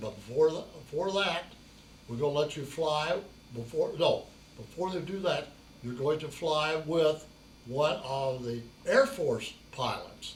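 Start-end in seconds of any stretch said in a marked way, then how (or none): none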